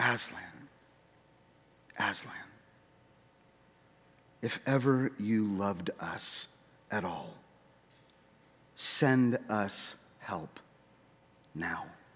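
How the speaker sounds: slow, hushed, drawn-out half-whisper. A girl leaning on the fighting top in the dark prays, half-whispering.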